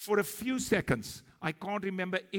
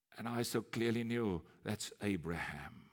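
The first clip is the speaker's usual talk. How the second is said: ordinary delivery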